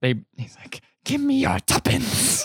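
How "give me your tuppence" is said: shrill, high, strange creature-like voice. Retelling a movie scene, old man demanding money: Gollum voice. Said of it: "Now he's turned into Gollum".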